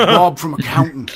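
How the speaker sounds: attempted Australian accent. Joking that a character tracks the deadly Bob: bad Australian accent. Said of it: "Can't do an Australian accent".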